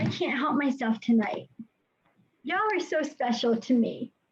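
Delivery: tearful, crying while speaking. Hosting a meeting, the speaker addresses the audience while crying. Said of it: "I am crying".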